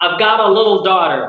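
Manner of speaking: general American accent, standard pronunciation. Speaker contrasts british and american pronunciation, demonstrating standard american pronunciation. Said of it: "standard Amer American pronunciation".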